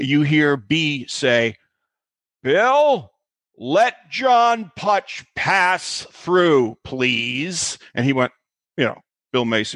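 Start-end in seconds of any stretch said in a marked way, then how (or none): 2.4-7.8 put-on grand commanding boom, very slow and drawn-out. Retelling someone calling from behind to let a scared kid through: booming Maude voice. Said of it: "in a booming voice".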